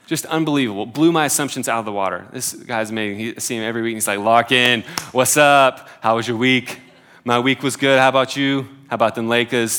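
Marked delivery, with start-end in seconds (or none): 4.2-9.8 terrible, loud, fake Brooklyn accent. Quoting a generous man he sees every week, bad brooklyn accent. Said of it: "that was the Brooklyn accent, it was terrible".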